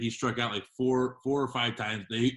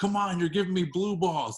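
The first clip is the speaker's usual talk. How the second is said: put-on high, loud heckling yell; 7 semitones higher than usual. Retelling what a dude yelled out during an at-bat: imitating a man yelling. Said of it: "the dude yelled out".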